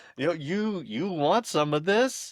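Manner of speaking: put-on high, sweet, cute little toddler voice. A father retelling what his daughter says to him, imitating a cute child's voice. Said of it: "she has a cute voice".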